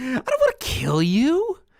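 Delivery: breathy, airy, high, swooping villain voice. Answering a request for an impression: Heath Ledger's Joker voice. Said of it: "Ledger's Joker is it is very breathy".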